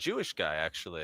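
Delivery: normal talking voice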